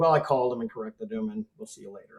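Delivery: ordinary delivery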